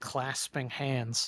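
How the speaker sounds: plain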